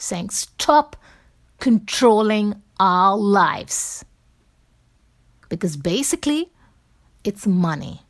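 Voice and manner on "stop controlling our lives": mock slow, drawn-out shout, word by word. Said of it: "I screamed and shouted".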